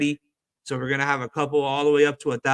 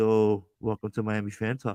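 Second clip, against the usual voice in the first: sultry, come-hither, low seductive voice; 4 semitones lower, 4 dB quieter than usual. Recalling opening miami fan talk on a headset, in a mock-seductive voice. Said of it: "talking all like seductive".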